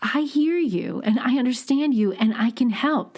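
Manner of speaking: friendly, warm, upbeat, smiling voice. Speaker showing how a smile sounds when offering help: smiling while speaking. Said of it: "I'm smiling right now as I say that".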